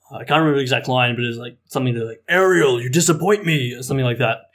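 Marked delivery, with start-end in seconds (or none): 2.2-3.7 booming, pitched-up, grand regal put-on voice. Retelling an audition line as King Triton: deep booming voice. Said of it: "I just said in this deep booming voice".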